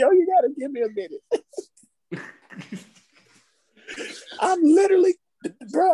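laughing while talking. Asking the others for a minute to recover: laughing while talking. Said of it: "I'm crying laughing right now".

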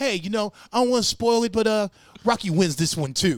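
pumped-up Italian guy voice. Retelling a comedy bit about a fan leaving rocky: imitating a pumped-up italian guy. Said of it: "the Italian guy going to see Rocky".

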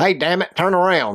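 cranky, fed-up, high, mad, snapping navigation voice. Joking about the Dale Jr. navigation voice on Waze, mock-angry Dale Jr. voice. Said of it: "He's always mad".

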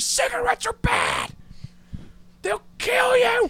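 shrill scream at the top of the lungs. Retelling when her son got stung and a lady offered cigarettes: retelling a scream. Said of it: "I'm just screaming".

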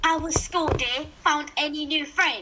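over-the-top, exaggerated put-on British accent. Playing the mom in a comedy bit, with an exaggerated british accent. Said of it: "I'm just going to try to do a really British accent".

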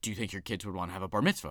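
put-on angry delivery. Retelling what she asked him, imitating an angry question. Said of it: "did she say it so angry like that".

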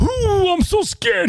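high mock politician whisper. Describing how Biden talks about vetoing Republican bills: Biden's strange whisper. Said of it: "he does that strange whisper like".

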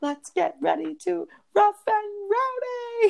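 very high, drawn-out, rising hype-man scream. Describing a clip where Frank the Tank takes over an intro, imitating Frank the Tank screaming. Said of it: "And he screams it so loud".

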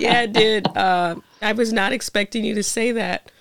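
slow, choked-up voice holding back tears. Responding to an unexpected heartfelt compliment, choked up. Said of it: "I'm trying not to get too choked up".

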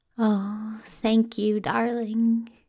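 fond, doting tone. A character thanks the one curled up against his side: most adoring, doting voice. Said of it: "said in his most adoring, most doting voice".

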